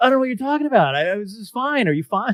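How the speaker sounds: high, mock innocent voice.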